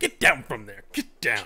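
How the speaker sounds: loud, firm, stern voice with swooping pitch. Showing how the line should have been said: stern command to get down. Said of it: "would have said the get down with more of a".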